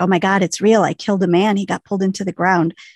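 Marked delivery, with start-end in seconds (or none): none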